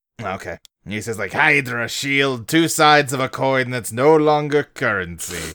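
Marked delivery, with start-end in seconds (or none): 1.3-5.5 put-on German accent. Quoting a movie villain's line: German accent. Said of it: "best German accent".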